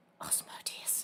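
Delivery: hushed, very soft whisper, as if leaning close. In a roleplay, a teacher character leans in and names her patron, whispered. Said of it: "she leans in and she whispers".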